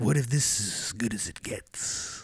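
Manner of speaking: words stretched out slowly. Quoting a movie line after naming the actor: Jack Nicholson impression. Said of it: "That's a pretty good impression".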